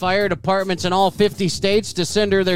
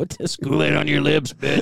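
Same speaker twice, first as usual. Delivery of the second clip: gravelly wrestler promo voice, pitched lower; 4 semitones lower than usual. Joking with the others about the Kool-Aid Man: Randy Savage voice. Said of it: "that sounded like Randy Savage".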